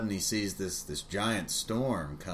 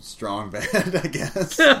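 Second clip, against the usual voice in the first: normal talking voice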